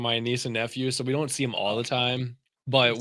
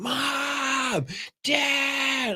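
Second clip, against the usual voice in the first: mock very high-pitched, drawn-out child's scream; 14 semitones higher than usual. Recalling five a.m. wake-ups at a relative's house, imitating a child screaming. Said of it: "you just hear my nephew just screaming".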